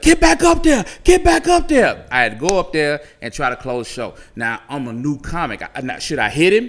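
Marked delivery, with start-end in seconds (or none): 0.0-2.1 shrill, very high shouted yell. Retelling the owner ordering a return to the stage: imitating someone yelling. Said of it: "she's yelling".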